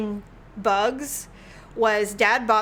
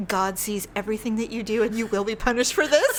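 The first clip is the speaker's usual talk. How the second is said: put-on grave, solemn tone. Speaker acts out what a woman said to them, mock-grave warning. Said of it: "Very gravely".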